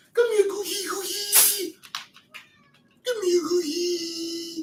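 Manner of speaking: very high, slow, meowy cat voice. While mixing a drink, the speaker suddenly talks in cat voice. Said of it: "I'm talking in cat voice".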